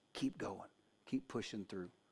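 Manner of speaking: very quiet, soft, gentle, hushed whisper. Retelling what God whispers to us, in a whisper. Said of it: "he whispers to us and he said".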